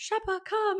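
mock whispering. Speaker retells what a woman whispered to her, retelling a whisper. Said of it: "And then she's like whispering".

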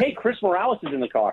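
plain

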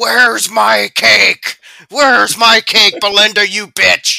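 put-on very loud, shrill, demanding old man bellow. Imitating a rich old man in the story yelling at Belinda: imitating an old man yelling. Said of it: "he's just constantly yelling".

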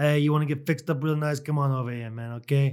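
put-on, imitated Jamaican accent. Greeting another man as brother, in a put-on Jamaican accent. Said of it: "I can't go much longer with the Jamaican accent".

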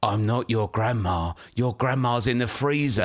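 put-on scary voice. Retelling what grandma would say coming out of the pantry, in a put-on scary voice. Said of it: "say in a really scary voice".

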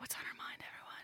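hushed, soft, breathy whisper, barely voiced. Starting a whisper segment and asking everyone what's on their mind: whispering. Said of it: "Time for a wine and a whisper".

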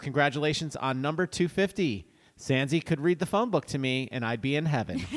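ordinary talk

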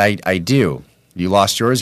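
ordinary delivery

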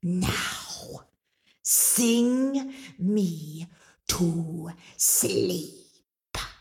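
whole line pushed out as a hiss. Narrator reads Mama Draga's command to Angelina, hissing. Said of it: "bared her teeth and she hissed".

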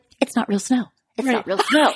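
offhand throwaway aside, as if off mic. Retelling what Mary said off mic at the reunion: imitating Mary talking quietly. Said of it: "she talks, like, so quiet".

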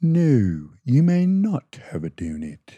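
read-aloud storybook panda character voice. Describing a kid's book, reading a line in the Mr. Panda voice. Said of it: "this is my voice for Mr. Panda".

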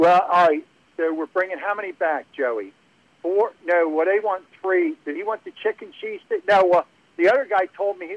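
put-on Philly accent. Telling of a waitress and staff sorting out an order, imitating a real philly accent. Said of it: "and real Philly".

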